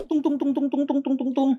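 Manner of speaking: high, far-off wooden "tung tung" like alarm drum.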